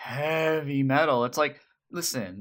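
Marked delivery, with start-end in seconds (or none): 0.0-1.2 words heavy metal stretched and drawn out. Imitating how the show's band says it: drawing out "heavy metal". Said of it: "they really draw out the word".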